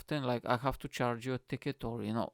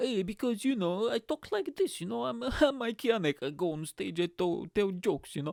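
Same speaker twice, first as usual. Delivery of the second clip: exaggerated Eastern European accent; 9 semitones higher than usual. Retelling how the speaker's comedy mates talk to them, stereotypical Eastern European accent. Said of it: "they do this like really stereotypical Eastern European accent".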